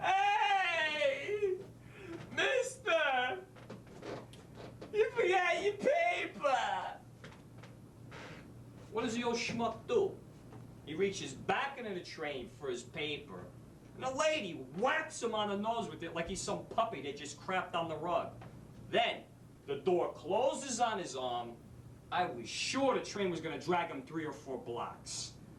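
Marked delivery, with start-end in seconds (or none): 0.0-6.5 high-pitched calling shout. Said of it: "The shopping bag lady calls out".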